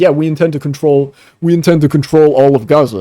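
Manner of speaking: put-on loud, strong Philadelphia accent. Act out what he straight up said about Gaza, as Netanyahu in a Philadelphia accent. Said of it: "in fucking Philadelphia ass accent".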